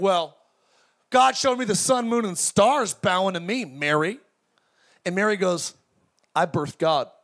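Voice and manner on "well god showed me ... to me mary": boastful, showing-off, one-upping bragging tone. Imagining two biblical figures living at the same time, one boasting: imitating Joseph bragging. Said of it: "Joseph's like bragging to Mary".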